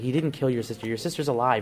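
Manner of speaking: normal talking voice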